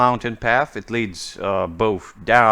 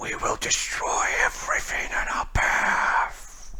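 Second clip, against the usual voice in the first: soft, breathy whispering voice; 7 dB quieter than usual. A game master voices the sword in a player's hand, sword whispering. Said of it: "it whispers".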